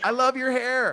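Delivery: play-acted, high, called-out yell. Retelling how an older woman on the street yelled: imitating a woman yelling. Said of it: "She just yelled".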